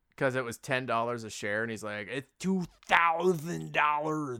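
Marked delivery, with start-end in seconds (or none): 2.1-4.4 slow, unhurried, measured, deliberate delivery. Retelling a scene from a film: impression of that guy. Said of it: "I do a really good impression of that guy".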